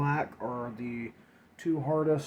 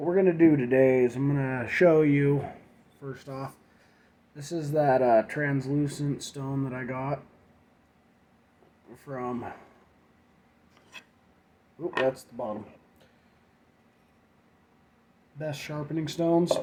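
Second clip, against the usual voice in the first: hoarse, rough voice; 4 dB louder than usual. Showing a sharpening stone on camera, hoarse voice. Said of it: "so my voice is really hoarse".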